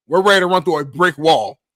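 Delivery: ordinary delivery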